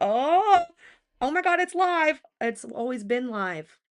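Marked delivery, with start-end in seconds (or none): 0.0-2.2 mock panicked cry, very high, loud, very slow, drawn-out. Retelling own reaction on realizing the stream was live: imitating own panic. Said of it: "I panicked right there".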